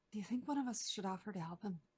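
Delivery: barely audible, very quiet half-whisper. Leaning over to another character at the fire, half-whispering very quietly. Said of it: "whisper very quietly".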